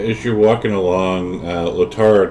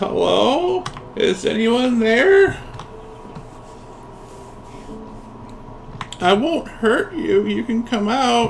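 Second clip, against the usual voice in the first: put-on very high elderly woman's voice, calling out; 3 dB quieter than usual. Game narrator voicing an old woman calling out in the woods, old woman's voice. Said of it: "an old woman's voice".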